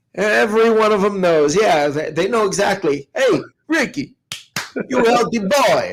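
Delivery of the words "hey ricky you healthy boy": put-on Italian accent, pitched higher. Retelling what an aunt in Chicago used to say: imitating Aunt Mary's Italian accent. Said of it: "by your accent".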